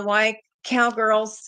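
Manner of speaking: speaking through laughter. Mentioning a joke from a write-up, laughing while talking. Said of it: "I can't even say it without laughing".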